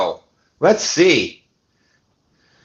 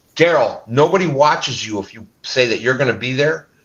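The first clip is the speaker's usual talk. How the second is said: plain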